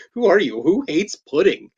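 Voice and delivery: ordinary talk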